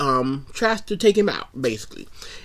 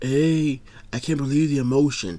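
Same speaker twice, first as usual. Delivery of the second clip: put-on flat monotone voice. Mocking the 90s voice actor for Hiroki, doing a flat, no-energy Hiroki voice. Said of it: "no energy and no anything".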